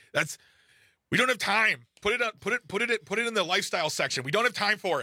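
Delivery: curt, dismissive tone. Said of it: "and we're like".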